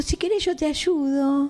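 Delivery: high, sweet, lovely little voice.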